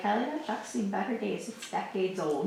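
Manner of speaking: ordinary talk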